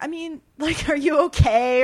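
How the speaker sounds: acted, sincere, very loud, drawn-out caring tone. Retelling own past question to a roommate: imitating own pure-hearted asking. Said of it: "pure-heartedly being like".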